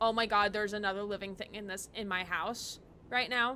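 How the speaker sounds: ordinary delivery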